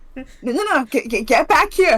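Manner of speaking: loud yelling, stammering and tripping over words. A player calls after someone who just left the room, shouting. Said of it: "You're just shouting into the room".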